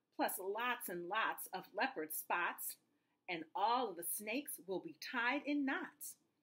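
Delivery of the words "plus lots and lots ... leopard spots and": plain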